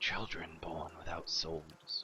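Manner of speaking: soft, hushed whisper. A man telling foreigners about the curse lowers his voice to a whisper. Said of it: "He lowers his voice to a whisper".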